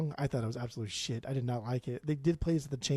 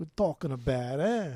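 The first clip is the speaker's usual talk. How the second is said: bad put-on New York accent ending in eh. Redoing an imagined listener's reaction, this time in a New York accent. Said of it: "More like a New York".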